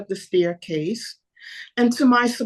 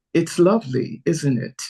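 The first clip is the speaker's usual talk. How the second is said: heavy, put-on British Nigerian accent; 6 semitones lower than usual. Retelling what a stranger said at an art exhibit: imitating heavy British Nigerian accent. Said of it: "the voice had a British, Nigerian accent, but very heavy British".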